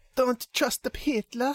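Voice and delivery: high, slow mock Italian accent.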